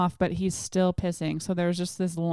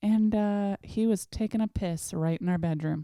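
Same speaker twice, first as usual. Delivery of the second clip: ordinary delivery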